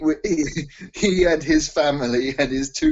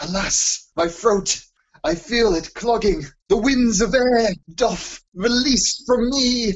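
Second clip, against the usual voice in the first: grand, proper, lofty Shakespearean declaiming, pitched high; 8 semitones higher than usual. Showing what proper professional theatre acting should sound like, shakespearean voice. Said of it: "It has to be proper Shakespearean".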